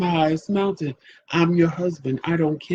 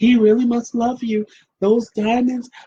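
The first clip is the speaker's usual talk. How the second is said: put-on gushing excitement, pitched higher; 6 semitones higher, 4 dB louder than usual.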